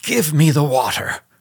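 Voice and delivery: high-pitched, gasped out, short of breath. A sick man speaks to the narrator; gasping. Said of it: "he gasped".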